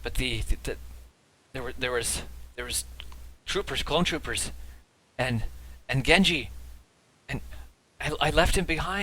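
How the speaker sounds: stammering, halting, broken fragments of speech. A wounded Jedi Knight, carried by a companion, answers in stammering, halting fragments. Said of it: "so Jeskai picks up this injured Jedi Knight who's bleeding all over you now. / No, and you see her like start to visibly get panicked again, and as she does, her green skin gets paler and paler, and y".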